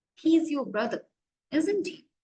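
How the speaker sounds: confident tone, falling pitch on "isn't he". English lesson on tag questions: falling pitch on isn't he. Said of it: "Falling intonation. It means our pitch is low".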